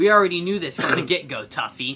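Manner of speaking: ordinary talk, nothing marked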